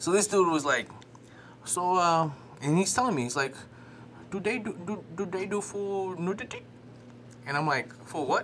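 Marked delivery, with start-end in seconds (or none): 4.3-6.6 put-on Indian accent, higher, quieter, slower. Retelling what a guy asked him, in an indian accent. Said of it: "is that your Indian accent?".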